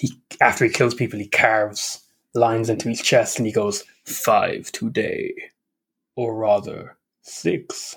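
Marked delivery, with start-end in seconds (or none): 4.0-7.9 slow, cool, drawn-out delivery. Quoting Vamp's line after he kills people, cool Vamp vampire voice. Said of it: "who sounds kind of like a cool vampire".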